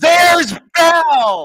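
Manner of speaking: very high, very loud, top-of-the-lungs shrill cry. Retelling a girl at Beauty and the Beast spotting Belle, imitating her shouting. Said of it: "she goes at the top of her voice".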